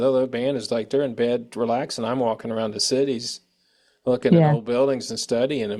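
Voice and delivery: plain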